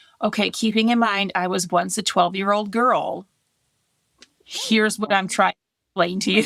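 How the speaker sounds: ordinary delivery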